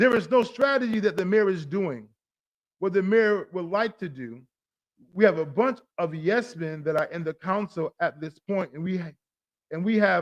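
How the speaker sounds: plain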